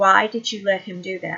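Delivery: ordinary delivery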